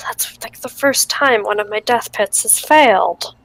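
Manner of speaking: disappointed, sighing whisper. Voicing a character let down that a trap failed: disappointed whisper to oneself. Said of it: "kinda whisper to myself".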